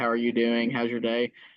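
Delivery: level, flat, robotic monotone voice. Showing how not to be funny: robotic voice. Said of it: "be like this right here the whole time, robotic voice".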